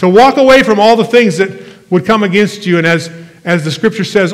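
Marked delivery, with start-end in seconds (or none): 0.0-2.8 loud, raised, preacher-style preaching yell. A pastor preaching to the congregation, yelling. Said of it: "I'm sorry I'm yelling at you".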